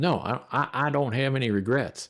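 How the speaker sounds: put-on Texan-accented speech. Retell a man's answer when asked whether he has any regrets, in a Texas accent. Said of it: "in his Texas accent".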